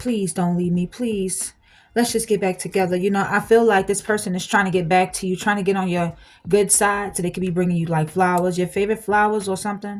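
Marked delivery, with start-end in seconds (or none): 0.0-3.0 mock pleading, begging tone. Acting out a person asking to get back together, acting out someone pleading. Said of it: "They're gonna be pleading".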